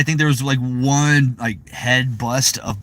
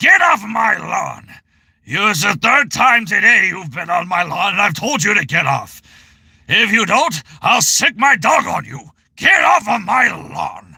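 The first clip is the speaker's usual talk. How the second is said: put-on high, cranky, grumpy old man voice; 8 semitones higher, 3 dB louder than usual. Offering someone a sample, a speaker does an old grumpy man voice. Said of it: "you want me to give you an old grumpy man voice?".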